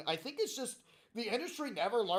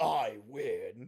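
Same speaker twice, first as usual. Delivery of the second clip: very low, serious villain voice; 8 semitones lower than usual. Imagining a game character's win line voiced seriously, serious Shao Kahn voice. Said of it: "him in a serious voice going".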